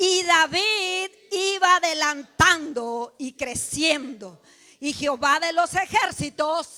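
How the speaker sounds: loud, slow, trumpet-blast voice. Reading the verse aloud again with the congregation: loud trumpet-like voice. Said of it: "leerlo nuevamente con voz de trompeta".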